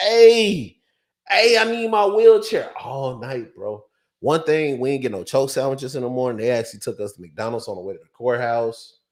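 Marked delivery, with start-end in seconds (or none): 0.0-2.7 put-on very high, stretched-out, drawn-out screaming. Retelling how a man in a cell acted: imitating a man screaming. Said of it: "he was just sitting there screaming like".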